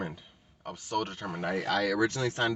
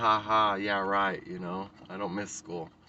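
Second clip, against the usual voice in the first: talking through a laugh. Retelling own reply to the financial aid staff, imitating own past laughing reply.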